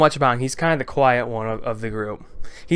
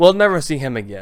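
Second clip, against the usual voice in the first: plain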